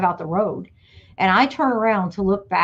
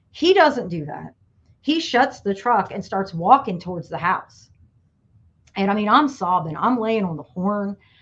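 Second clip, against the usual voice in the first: normal talking voice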